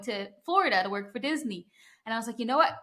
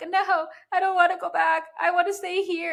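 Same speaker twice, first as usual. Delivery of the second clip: play-acted, high, wailing screaming and crying; 8 semitones higher, 4 dB louder than usual. Recalling being nine on a family vacation, refusing to go back: imitating screaming and crying. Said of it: "I was literally screaming, crying".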